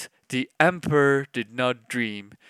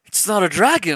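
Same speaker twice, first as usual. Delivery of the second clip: exclaimed out, high and ringing; 5 semitones higher, 4 dB louder than usual. The emperor's second advisor, coming to see the stone, exclaiming. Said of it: "exclaimed the second advisor".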